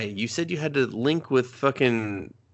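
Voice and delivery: ordinary talk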